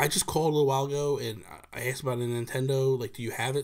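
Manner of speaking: normal talking voice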